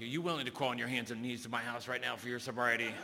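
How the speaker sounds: frightening, really scary-sounding voice. Retelling what a sponsor said when he called, imitating a really scary voice. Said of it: "he told me this really scary voice".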